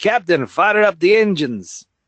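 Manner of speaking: slow, drawn-out voice with pitch lifted a little. Telling a story about someone at a control panel, doing a Scotty impression. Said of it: "That was my Scotty impression".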